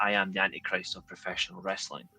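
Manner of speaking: very hollow, empty wrestling promo voice. Retelling a line from his build-up vignettes: very hollow voice. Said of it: "very hollow voice".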